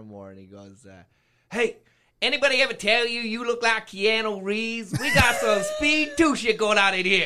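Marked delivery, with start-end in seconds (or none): 1.5-7.1 put-on American urban street accent.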